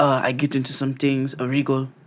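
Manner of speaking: put-on Korean accent. Retelling what a man said about his work: imitating a Korean accent. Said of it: "it's supposed to sound like it's illegal".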